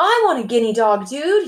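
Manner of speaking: annoyed, teeth gritted. Narrator voicing a character's demand, through gritted teeth. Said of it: "he says through gritted teeth".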